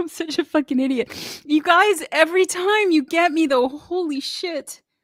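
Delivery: tearful, voice catching. Reacting on the show to a performance, crying, choked up. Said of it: "I have to stop crying on the show".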